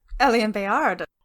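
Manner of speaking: put-on Norwegian-accented speech. A character introduces himself after being asked his name: norwegian accent. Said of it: "Is that a Norwegian accent I detect?".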